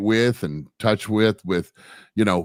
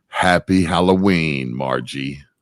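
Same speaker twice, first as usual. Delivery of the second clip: low, spooky Halloween scary voice; 4 semitones lower than usual. Co-host greeting the host on a halloween special, scary voice. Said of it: "You have your scary voice on".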